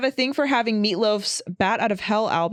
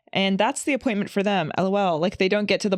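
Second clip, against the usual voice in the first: ordinary delivery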